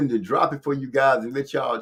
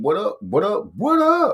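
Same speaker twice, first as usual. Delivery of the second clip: high, bouncy, swooping animated sitcom voice, pitched up; 7 semitones higher, 4 dB louder than usual. Returning a guest's greeting, the speaker answers in a Martin voice. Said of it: "in my Martin voice".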